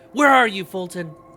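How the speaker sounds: desperate, yelled calling out. Playing a character calling out for someone, a desperate yell. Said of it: "I'm gonna yell out in desperation".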